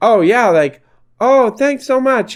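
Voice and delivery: put-on high, slow, grateful kindly grandmother voice. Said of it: "she'd be like".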